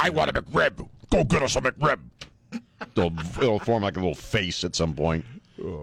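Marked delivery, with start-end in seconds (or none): 0.0-2.0 put-on character voice, much higher pitch. Joking about a twin growing out of a body, then giving it a voice. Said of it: "Then we give it a voice".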